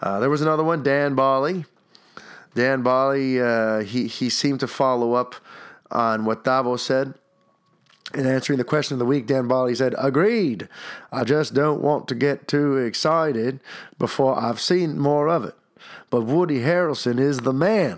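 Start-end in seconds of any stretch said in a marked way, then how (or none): 10.0-18.0 clumsy, bad fake Australian accent. Reading a listener's comment aloud: bad australian accent. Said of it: "my Australian accent was probably the worst".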